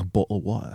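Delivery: refined British accent. Contrasting British dialects, now the other one: elegant British accent. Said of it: "the elegance".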